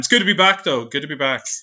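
put-on, fake morning radio presenter voice. Co-host welcoming the show back after years away, in a fake radio dj voice. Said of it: "Stop that fake radio voice".

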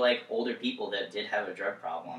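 ordinary talk, nothing marked

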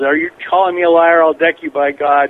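acted-out, put-on yell. Retelling how a guy started screaming at another man, retelling a yell. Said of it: "he yells".

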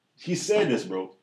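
ordinary talk, nothing marked

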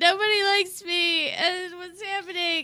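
acted, mock crying. Recounting running into Keith and Jim on the street, the speaker re-enacts crying. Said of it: "and I was crying".

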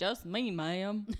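put-on weird Texas Southern accent. Retelling a movie scene, answering an old woman, in a Texas southern accent. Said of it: "His weird southern accent".

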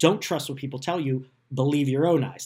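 normal talking voice

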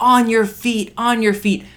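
high-pitched, shouted, urging yell. Retelling trying to get people around you to stand and cheer, re-enacting shouting. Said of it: "I'm yelling at people".

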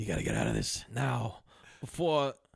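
put-on whisper. Retelling a movie scene, a character whispering to one of the idiots, retelling a whisper. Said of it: "he's whispering to one of the idiots".

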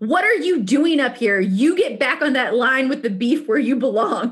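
acted, put-on screaming. Recounting someone screaming at them from a foot away, retelling a scream. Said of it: "screams at me".

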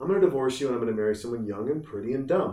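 plain

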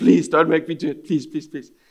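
frightened, scared pleading, begging tone. Retelling a scared student begging not to translate: imitating a scared plea. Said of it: "he was quite scared".

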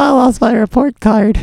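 very high-pitched character voice. Saying a line the way Laura says it. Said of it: "That's Laura".

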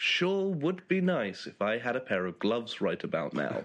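ordinary talk, nothing marked

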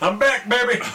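high-pitched cartoon robot voice. While naming cartoon voice actors, breaking into a Bender voice.

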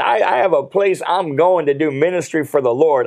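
plain

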